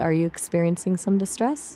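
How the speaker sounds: ordinary delivery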